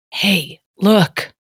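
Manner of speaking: really quiet, hushed, under the breath. A player's character points something out without alarming the rest, really quiet. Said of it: "I'm going to say it really quiet".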